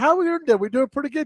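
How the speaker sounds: put-on very high, sweet, kindly old-lady voice. Explaining where a greeting comes from, quoting a former coworker in a sweet older lady voice. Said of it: "very sweet older lady".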